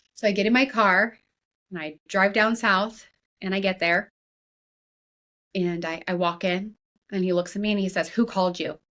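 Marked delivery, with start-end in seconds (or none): 8.1-8.8 imitated angry voice. Retelling what a dialysis patient asked on arrival: imitating an angry question. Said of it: "He's angry".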